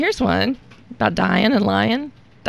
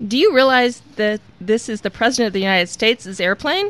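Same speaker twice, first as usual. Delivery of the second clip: ordinary delivery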